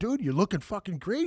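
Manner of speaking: play-acted, deliberately creepy, over-friendly flattering tone. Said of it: "I just made it fucking extra creepy".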